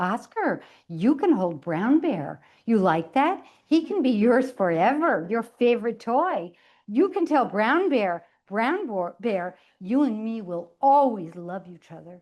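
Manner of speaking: patronizing, condescending, talking-down nanny voice. Narrating a sister speaking to her four-month-old brother, in a condescending nanny-like voice. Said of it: "In her most condescending, nanny-like voice".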